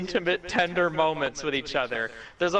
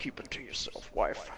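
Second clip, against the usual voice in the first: tender, breathy, soft, loving whisper; 8 semitones lower, 11 dB quieter than usual. Quoting a man who says it while lying down: imitating a soft loving tone. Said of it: "He says it in like a loving kind of way".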